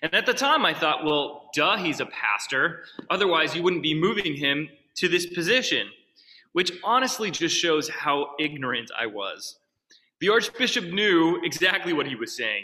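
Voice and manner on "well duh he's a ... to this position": usual speaking voice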